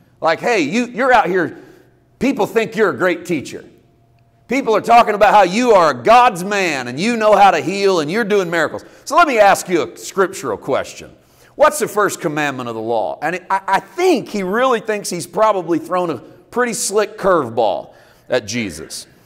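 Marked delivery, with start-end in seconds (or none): 0.4-13.2 tongue-in-cheek, dripping, sarcastic questioning tone. Acting out a scribe questioning Jesus: imitating dripping sarcasm. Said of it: "You can almost feel it dripping in sarcasm".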